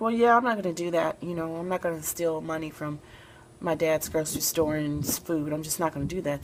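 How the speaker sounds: plain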